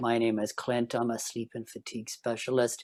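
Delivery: flat monotone drone, same tone, no volume change. Demonstrating how the speaker once talked: flat, no volume or intonation changes. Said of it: "I stopped, uh, you know, changing my, my my my volume and my intonation, and I started talking like this".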